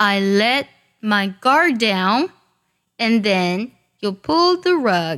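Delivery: careful, word-by-word reading, each word with care. Reading an English sentence full of elisions for close listening: slow, careful reading. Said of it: "仔细听我慢慢来读".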